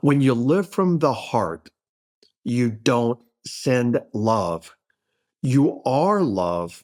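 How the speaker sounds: very slow, deliberate, drawn out word by word. Sharing a quoted saying with listeners, said very slowly. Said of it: "I'm going to say it very slowly".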